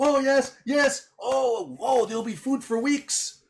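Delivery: gleeful, delighted character voice, very high drawl. Voicing a character clapping while a player vomits worms: very happy character voice. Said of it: "he seems very happy about it".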